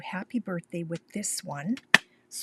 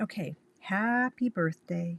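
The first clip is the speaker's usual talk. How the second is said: plain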